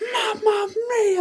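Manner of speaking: massively over-the-top commentator cry, very high. Imitating a commentator who goes massively over the top: over-the-top Mauro Ranallo commentary. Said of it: "goes massively over the top".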